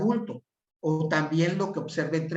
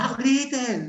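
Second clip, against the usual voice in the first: shouting at much higher pitch; 4 semitones higher, 4 dB louder than usual. Demonstrating how adults yell at a child not to yell: shouting. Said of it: "Se lo estoy diciendo gritando".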